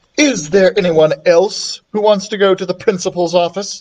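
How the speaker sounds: plain reading voice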